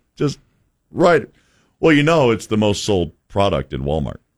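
dry, low, rapid deadpan delivery. Retelling a seller's answer about a $75 banana holder, imitating a deadpan seller. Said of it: "deadpan to me".

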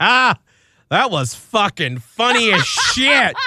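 deep Southern lady's drawl, loud and slow. Radio host retelling a caller's funny voicemail in a deep southern accent. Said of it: "a lady with a deep Southern accent".

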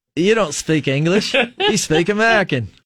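high-pitched put-on Australian accent. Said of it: "give us an Australian accent".

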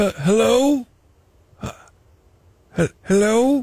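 put-on, fake elderly man voice. Prank calling a stranger as an invented character: put-on old man voice. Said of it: "You listen to my old man".

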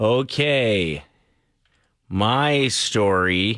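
unhurried, drawn-out slow speech. A host starts his story while a colleague waits for the break, talking very slowly. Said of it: "I know you're talking slow".

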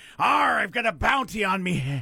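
funny put-on pirate voice, high and slow. Telling a pirate joke, delivering the pirate's punchline in a pirate voice. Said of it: "I get to do a funny voice".

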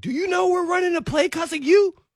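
very high, frustrated, fed-up yelling. Retelling how he lost his temper at practice: imitating his own past yelling. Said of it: "Just start yelling".

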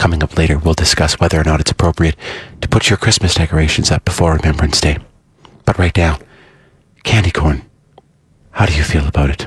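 very deep, affected, pretentious public radio host voice. Parodying a radio host after proposing pretentious public radio voices: pretentious public radio voice. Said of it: "in the very public radio voice way".

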